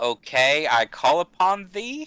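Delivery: doubtful, half-questioning, skeptical tone. Speaking in character to skeletons: questioning, skeptical tone. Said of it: "kinda skeptical tone".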